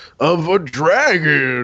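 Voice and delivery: put-on old miser voice, "dragon" drawn out. Narrator recalling voicing a dragon in a children's book series, old miserly man voice. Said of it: "Everyone knows that's an old miserly man".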